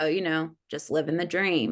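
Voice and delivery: heavy, thick, dripping sarcastic tone. Retelling what a worker on a ladder said: imitating a sarcastic reply. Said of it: "very sarcastically".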